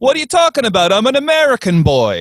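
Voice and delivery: put-on heavy Eastern European accent, very high, swooping, sing-song. Retelling how a man answers when asked where he's from, thick eastern european accent. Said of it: "very thick, like Eastern European accent".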